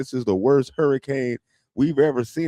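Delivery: mock sobbing weatherman voice, high and teary. Retelling a weatherman on tv: imitating a crying weatherman.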